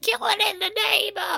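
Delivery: mock cry, very high, creaky, squeaked out.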